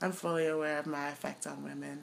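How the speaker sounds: low, flat deadpan. Imitating Idris Elba's line on The Office: deadpan Idris Elba impression.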